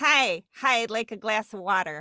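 slow Great Lakes regional accent. Contrasting regional accents with the East Side one, in a Great Lakes accent. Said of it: "the Great Lakes is like".

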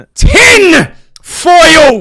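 furious yell, very loud and shrill. Saying a word after being asked to sound angry: really aggressive angry tone. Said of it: "a really aggressive tone".

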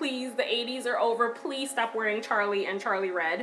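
plain

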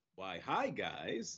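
very quiet, low, hushed dude voice. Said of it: "Malcom, do it".

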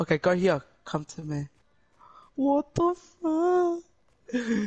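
frightened, drawn-out calling, high and swooping. Player exploring a foggy game with Sam, scared. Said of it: "I'm scared".

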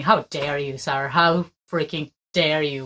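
a little angry, worked-up, indignant outburst. Reacting to what is happening, a little angry. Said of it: "I'm getting a little angry over here".

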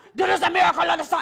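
mock female yell. Retelling what a woman in the crowd said: imitating a woman yelling. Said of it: "Like she yells at me".

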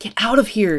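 hushed whisper. With a bullet in his abdomen, he whispers to the woman pressing his wound. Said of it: "Jack whispered".

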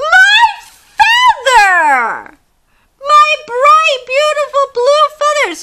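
very high, very loud, swooping squawk, feather drawn out. Reading a story where the monkey throws away the chicken's feather, squawking Chicken Chuck voice. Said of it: "squawked Chicken Chuck".

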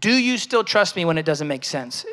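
usual speaking voice

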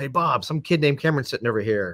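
normal talking voice

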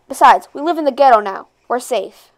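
ordinary delivery

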